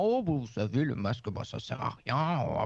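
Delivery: put-on stately French-accented voice. Quoting people who gave uninformed opinions on masks: François Mitterrand impression. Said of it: "Belle imitation de François Mitterrand".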